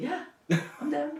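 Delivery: sweet, gentle, soft, very high voice. Retelling a friend agreeing to be co-director: imitating Jackie's soft voice. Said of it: "with her soft voice".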